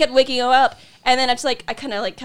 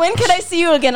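heavily broken English phrasing, pitched up; 5 semitones higher, 3 dB louder than usual. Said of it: "really broken English".

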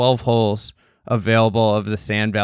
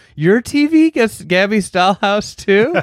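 put-on very high, loud, thrilled little-kid yelling; 11 semitones higher, 6 dB louder than usual. Retelling a child's reaction to the TV in the shed, imitating an excited yelling child. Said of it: "just in that excited yelling child voice was like".

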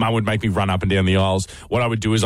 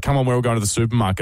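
normal talking voice

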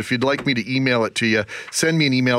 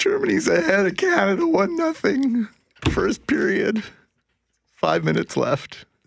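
frightened voice at a higher pitch; 10 semitones higher than usual. Giving the latest hockey score from Pyeongchang on air: scared. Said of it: "how scared you are".

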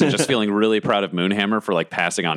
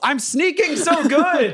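very high, very slow, drawn-out yelling. A game narrator voices a character who looks over at a player, yelling.

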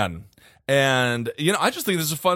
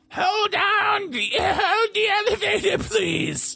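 put-on old woman voice, much higher, slower. Telling a story about an elevator, imitating an old woman: old woman voice. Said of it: "I do like that voice".

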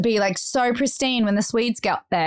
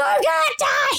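put-on screaming, very high-pitched. Retelling finding Bodhi holding his bleeding thumb, imitating Bodhi screaming. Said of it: "Bodhi's screaming that he's going to die".

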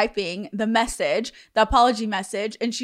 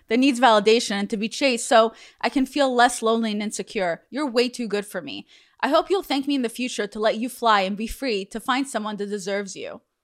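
ordinary delivery

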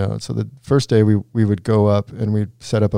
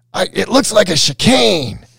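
mock very high drunken holler, drawn out; 10 semitones higher, 3 dB louder than usual. Retelling how a trick got its name beside an announcer, retelling Jimmy Halepoff's drunk yell. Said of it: "drunk Jimmy just yells".

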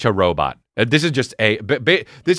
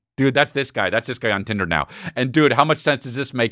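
ordinary talk

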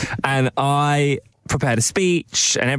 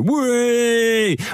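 put-on laddish bloke voice, higher; 10 semitones higher than usual. Explaining what a lad does when a waiter smashes a glass: imitating a pub lad. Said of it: "they'll just go".

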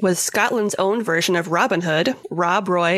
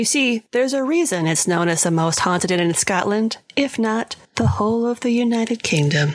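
ordinary talk, nothing marked

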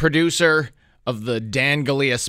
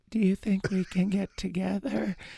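put-on slow, high, drawn-out, creepy old-lady voice; 6 semitones higher, 8 dB quieter than usual. Retelling a voice that snuck up at a traffic light: imitating a creepy old lady voice. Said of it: "sounded like that".

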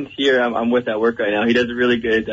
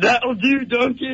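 put-on ogre voice, higher; 13 semitones higher than usual. Doing a Shrek impersonation on a radio call-in line: Shrek voice. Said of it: "can you do a little more?".

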